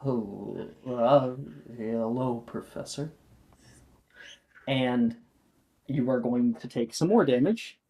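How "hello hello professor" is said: slow, garbled, indistinct, muddled speech. Voicing a figure walking toward him, greeting the professor: muddled voice. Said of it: "muddled voice".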